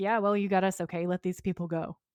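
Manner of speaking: plain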